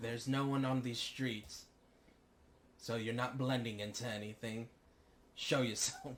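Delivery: put-on British accent, called out loudly. Calling out to someone hiding on an empty street: British accent. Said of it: "I don't have a British accent. Why did I do that?".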